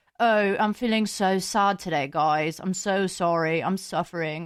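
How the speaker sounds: speaking with a British accent. Explaining how a British accent changes the word sad, in a British accent. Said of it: "if you put a British accent onto the word sad".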